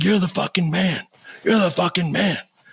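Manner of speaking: mock very high, excited, repeated cheering shout. Retelling a kid who runs beside him yelling at him, imitating the yell. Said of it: "and he's yelling at me".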